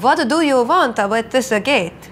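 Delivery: put-on Transylvanian-accented voice. A player breaking out accents during the session, Transylvanian accent. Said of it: "I can do Transylvanian".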